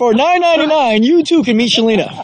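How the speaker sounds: infomercial announcer voice. Joking on camera about meeting Shalina, doing an infomercial announcer voice. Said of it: "You know I gotta do it like an infomercial".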